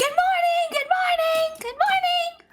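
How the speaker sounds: very high, proud shouting, over and over. Speaker describes a character running around greeting everyone, retelling proud shouting. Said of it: "proudly shouting them out".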